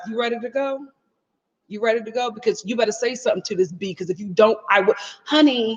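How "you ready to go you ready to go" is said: mock under-the-breath muttering. Acting out what a partner should say before a fight: acted under-the-breath muttering. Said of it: "saying to me under his breath".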